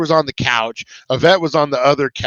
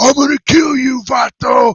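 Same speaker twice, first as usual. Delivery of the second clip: mock furious gang-member voice, pitched up; 11 semitones higher, 4 dB louder than usual. Retelling how the guys threatened him when they got pissed; imitating an angry threat. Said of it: "They would get so pissed".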